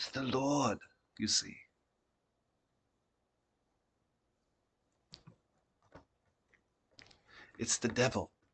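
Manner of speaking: very quiet, hushed, barely above a hush. Voicing a character answering the players' question: very quiet voice. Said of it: "and he goes, uh, very quiet".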